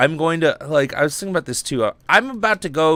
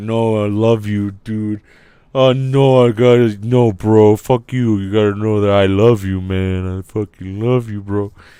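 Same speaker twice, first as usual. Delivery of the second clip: put-on loud, sloppy, drunken rambling and gushing; 6 semitones lower, 5 dB louder than usual. Rambling to listeners, saying it's like being drunk: acting drunk. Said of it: "It's like I'm drunk and I'm like".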